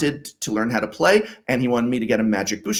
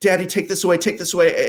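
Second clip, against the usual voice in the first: mock high, shaky, trembling frightened little boy voice; 7 semitones higher than usual. Retelling a frightened child's plea after seeing a gory card: imitating a scared child's shaky voice. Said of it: "he's kind of with a thing in his voice".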